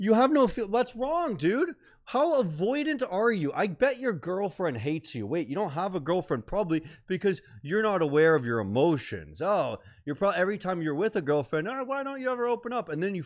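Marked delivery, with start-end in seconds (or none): 11.7-12.9 high-pitched, upset, freaking-out pleading tone. Imitating a girlfriend upset with her partner: imitating a girlfriend freaking out. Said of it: "when she's freaking out at you".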